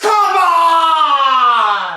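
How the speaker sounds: very high, fierce, swooping shriek, "on" drawn out. Doing a challenge with a friend, acting out Tashi after she hits: imitating Tashi's scream. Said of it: "She screams".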